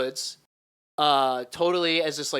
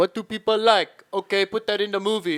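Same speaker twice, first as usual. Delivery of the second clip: mock Laotian accent, high-pitched; 5 semitones higher, 3 dB louder than usual. Mocking how movies get made while chatting, in a put-on Laotian accent. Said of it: "what accent was that?".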